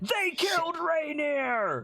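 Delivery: loud echoing shout. A voice like Salcom's echoes up the street, far louder than before: shouting. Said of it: "far louder than ... Salcom just said it ... Salcom's voice shouts".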